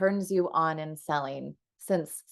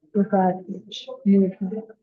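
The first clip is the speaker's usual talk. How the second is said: alluring, seductive whisper; 3 semitones higher, 4 dB louder than usual. Asked to try it one more time: a seductive whisper. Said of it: "give us their seductive whisper".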